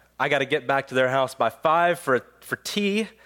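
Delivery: plain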